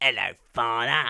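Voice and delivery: put-on East London accent. Guessing the character's accent, imitating Barty Crouch Junior: East London accent. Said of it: "he's definitely East London".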